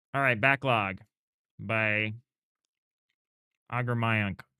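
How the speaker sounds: talking through a mouthful while chewing. Introducing the next game on the list, talking while chewing. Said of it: "Sorry, I'm chewing".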